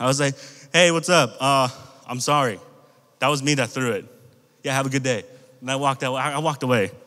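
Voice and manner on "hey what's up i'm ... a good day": usual speaking voice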